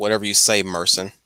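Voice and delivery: plain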